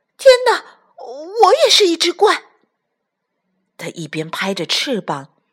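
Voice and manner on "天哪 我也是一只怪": very high, loud, rushed, shrieking cry. Reading a story, a character looks at her reflection in the water and cries out. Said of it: "大叫起来".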